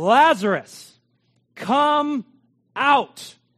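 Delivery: very loud, booming, full-voiced crying out. Retelling a bible passage, quoting the call at the tomb, retelling a loud cry. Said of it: "he cried out with a loud voice".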